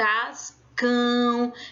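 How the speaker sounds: cascão said with force on cão. Portuguese lesson on the tonic syllable, stress on 'cão' in cascão. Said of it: "eu coloco mais força para dizer cão".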